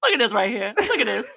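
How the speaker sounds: put-on old man voice with Southern accent.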